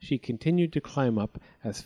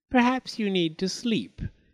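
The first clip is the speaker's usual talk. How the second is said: high cackling laugh through the words; 6 semitones higher than usual. An old woman answers someone who pricked a finger and feels weak, cackling. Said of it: "said the old woman with a cackle".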